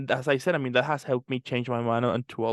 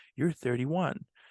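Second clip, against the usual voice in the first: very soft, gentle voice, quieter; 2 semitones higher, 3 dB quieter than usual. Retelling turning thirty-one as a voice in the head speaks, very soft inner voice. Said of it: "this very soft voice came to my head".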